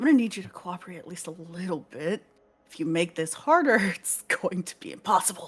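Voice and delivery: hushed low whisper. A character holding a person tightly and pulling them along, in a low whisper. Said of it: "I am going to whisper low".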